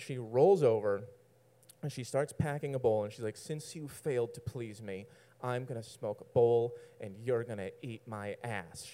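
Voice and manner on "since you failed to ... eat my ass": mock mean tone, quieter. Retelling what she said to him, imitating her mean tone. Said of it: "She says it all mean like that".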